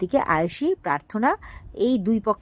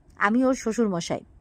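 usual speaking voice

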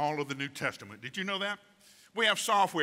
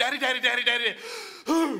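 mock frantic child cry, high and rushed; 9 semitones higher, 5 dB louder than usual. Describing how we run to God when anxious, acting like a panicked child. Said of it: "like a panicked child going".

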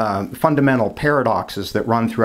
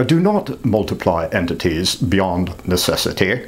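put-on, phony English accent; 3 semitones lower than usual. Explaining Occam's razor, quoting Occam's principle in a phony English accent. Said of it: "why the phony English accent?".

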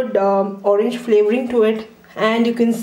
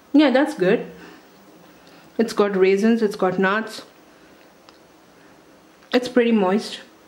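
talking with mouth full of food. Taste-testing a cake on camera, the speaker comments while talking with mouth full. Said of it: "I've got food in my mouth and I'm talking".

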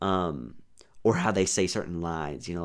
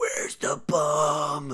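very high grunting voice, "bomb" stretched out; 9 semitones higher, 4 dB louder than usual. Mocking how Batman should not sound: imitating a grunting Batman voice. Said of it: "his voice should not be a caveman grunting at you".

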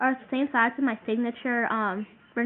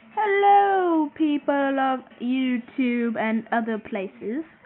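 slow, seriously bad put-on British accent; 3 dB louder than usual. Greeting YouTube viewers in a seriously bad British accent. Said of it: "That was my impression of a seriously bad British accent".

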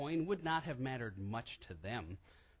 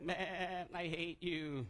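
very slow, drawn-out, resentful angry sheep voice; 2 semitones higher than usual. Speaking about lost sheep and voicing one, sheep impersonation. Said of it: "That was my sheep impersonation".

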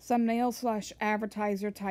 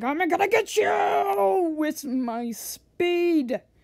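high, slow, loud scream. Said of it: "she's, like, all screaming".

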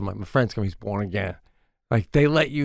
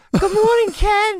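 loud, very high, feminine put-on voice; 6 dB louder than usual. Joking around, greeting Ken in a put-on high voice. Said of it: "doing a high voice".

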